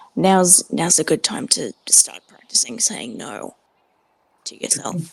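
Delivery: low, private whisper as if close to the ear. Speaking in character to another character during a scene: whispering. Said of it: "sort of whispers to Metal".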